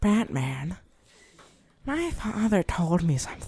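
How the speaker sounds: animated put-on voice, pitch swooping up and down. Showing the other speaker a Joker impression. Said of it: "Joker impression".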